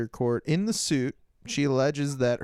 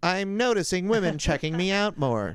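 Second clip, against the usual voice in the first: put-on mechanical robot voice, pitched up; 6 semitones higher than usual. Trying out an opening line for a video: robot voice. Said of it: "They love the robot voice".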